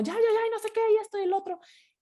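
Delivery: impatient rushing tone, high and fast.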